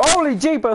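sudden high, loud, startled yell.

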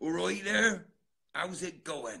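accent from Devon. After trying a Cornish accent, show the other speaker a put-on Devon accent. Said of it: "Or Devon".

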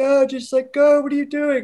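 put-on very high-pitched shout. Stuck in one spot, recalling everyone yelling at them, retelling people yelling. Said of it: "Everyone's yelling at me like".

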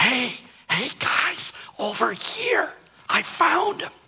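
very high, drawn-out, slow stage whisper. Imagining a shepherd calling the others on finding baby Jesus, in a loud whisper. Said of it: "in a loud whisper".

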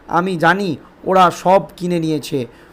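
ordinary delivery

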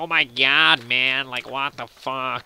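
really bad put-on American accent, very slow. Recalling how friends used to talk, in a really bad american accent. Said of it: "we would put on, like, a really bad American accent. Like".

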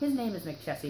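ordinary talk

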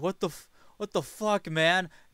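high, loud scream. Voicing a bandit diving away from an attack: bandit screaming. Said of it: "his buddy screaming".

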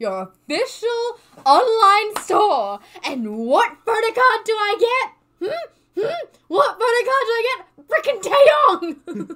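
very high, very loud, shrill, climbing angry rant. Complaining about getting the wrong photo card in an album: still mad, ranting. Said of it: "I'm still mad".

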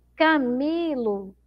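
Camilo with long, heavy stress on mi. Teacher finding the strong syllable in the name camilo: stressed, drawn-out syllable mi. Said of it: "qual sílaba aí a pró demorou mais pronunciando".

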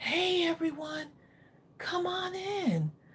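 soft, soothing voice. Retelling how story time began with the kids: imitating own calming voice. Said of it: "I would use my voice as the calming thing".

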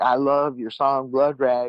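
put-on Texas accent, like a kid. Retelling what a seventeen-year-old from Texas in rehab said: imitating a Texas accent. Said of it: "he had an accent".

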